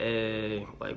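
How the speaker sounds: dull, dead monotone delivery with no energy at all.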